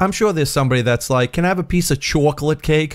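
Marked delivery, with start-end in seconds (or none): 1.3-3.0 put-on New York accent. Imagining a Star Wars character speaking: put-on New York accent. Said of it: "They don't really have a New York accent".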